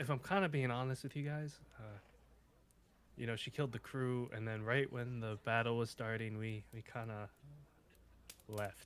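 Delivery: soft, hushed half-whisper under the breath. Playing a character, the speaker confides to the others in the group, half-whispering. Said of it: "he whispers like".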